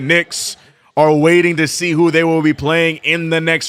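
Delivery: normal talking voice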